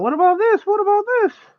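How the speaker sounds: play-acted, very high, insistent, repeated screaming. Retelling how Caroline screams suggestions from the background: imitating Caroline screaming. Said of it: "Caroline will be screaming in the background".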